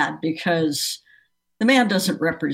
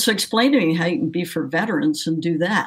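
ordinary talk, nothing marked

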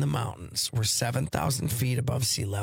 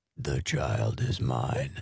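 creepy put-on voice, much lower; 11 semitones lower than usual. Trying out a haunted-house voice, creepy put-on voice. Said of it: "That's kind of creepy".

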